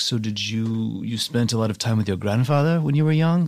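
put-on heavy, thick, laid-on German accent. Retelling what a woman asked while rubbing the speaker's stomach, thick german accent. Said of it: "she has a really thick german accent".

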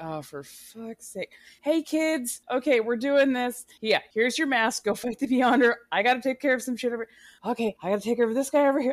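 put-on exasperated father voice. Imitating Blue Marvel sending the kids off to fight: exasperated Blue Marvel voice. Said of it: "you could feel the exasperation".

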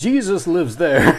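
high, loud cry full of horror.

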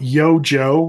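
ordinary delivery

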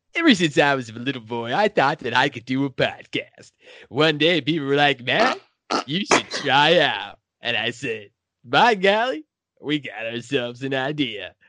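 parody radio host announcer voice. Doing a podcast intro parody as Casey Kasem, Casey Kasem voice. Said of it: "I'll do a parody of Rick D's, but I'll do it as Casey Kasem".

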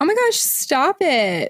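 put-on high, swooping girly tone. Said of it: "picture her saying it in this tone".

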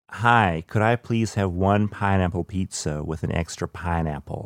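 light, slight put-on American accent. Showing how she orders pizza for americans, with a slight american accent. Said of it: "affect a tiny American accent".

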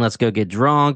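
ordinary delivery

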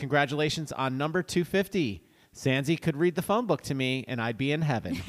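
ordinary talk

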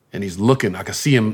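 ordinary delivery

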